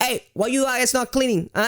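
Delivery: bad put-on Italian accent, voice very high. Imitating a woman who called every five minutes over a camera feed: attempted Italian accent. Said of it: "she was Italian. I don't know how to make an Italian accent".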